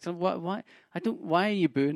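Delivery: put-on bewildered, baffled, halting, stumbling delivery. Retelling how the performer reacted to the audience booing: imitating a confused comedian. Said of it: "genuinely confused".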